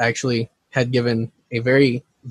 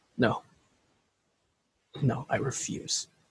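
very quiet, barely voiced whispered mutter under breath; 13 dB quieter than usual. A game master voicing an NPC after his partner's death: Buzz, under his breath. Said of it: "they hear Buzz under his breath".

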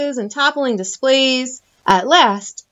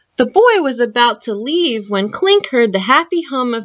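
ordinary delivery

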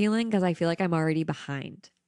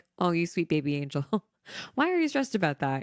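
put-on amused, affectionate, gently laughing teasing. Act out your higher self answering your anxiety, imitating nice laughing at someone's anxiety. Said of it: "she's just like laughing at me having anxiety, but in a nice way".

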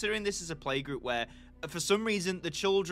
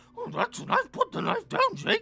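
very high, swooping, goofy cartoon dog voice, wildly swinging; 4 dB louder than usual. Voicing a character in the scene, in a discount Scooby-Doo voice. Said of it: "Why do I sound like discount Scooby-Doo doing that?".

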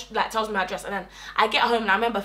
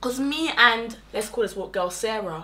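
plain

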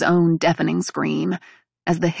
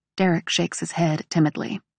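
ordinary delivery

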